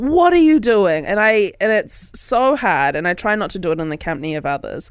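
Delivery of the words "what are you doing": frustrated outburst, pitched higher and louder. Retelling what they say at the steering wheel when drivers go too slow: imitating own road-rage frustration. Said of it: "at my steering wheel going".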